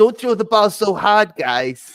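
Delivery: stretched words, high and loud. Quoting a South Park kid: Kyle Schwartz voice. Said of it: "Kyle Schwartz, that's the guy you're thinking of".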